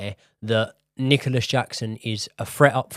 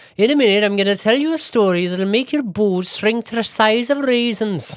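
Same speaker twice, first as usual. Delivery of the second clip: very high, put-on Welsh accent; 10 semitones higher, 4 dB louder than usual. Quoting the flatmate's line from Notting Hill: Welsh accent impression. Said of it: "you were doing Welsh there".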